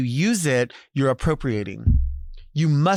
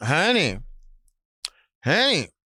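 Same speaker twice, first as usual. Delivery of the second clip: brusque, dismissive, curt, short "honey, honey"; 2 semitones higher than usual. Demonstrating how emphasis changes the word honey: curt honey. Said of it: "If you're very curt about it".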